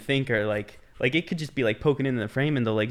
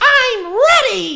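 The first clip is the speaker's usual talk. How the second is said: very high, very loud, shrill cartoon voice, belted out; 12 dB louder than usual. Doing a SpongeBob impression after being asked for one: SpongeBob voice. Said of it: "give their best SpongeBob impression".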